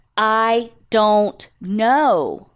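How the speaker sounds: exasperated, frustrated, fed-up brush-off. Retelling a man questioned by a detective, retelling a frustrated answer. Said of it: "out of frustration".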